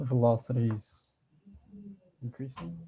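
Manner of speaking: rising, unsure, question-like intonation. A student answering a tutor's physics question, said like a question. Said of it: "You said it like you were asking a question".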